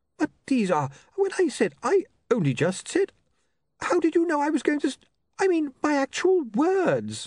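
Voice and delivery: very high stammering in broken-off fragments. The bursar scans the paper in front of him and stutters. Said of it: "he stuttered".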